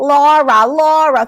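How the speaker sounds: calling out high and loud. Speaker tells listeners how to hear the warning, in a Steve Urkel voice. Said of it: "Think of Steve Urkel".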